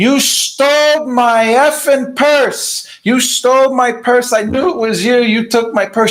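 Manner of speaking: high-pitched, accusing yelling. Retelling how a stranger accused them of stealing her purse: imitating a woman yelling. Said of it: "She starts yelling this".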